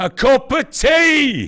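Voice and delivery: very loud, very high, very slow, drawn-out yell. Acting out an english speaker asking a foreigner for tea, shouted. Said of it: "We shout".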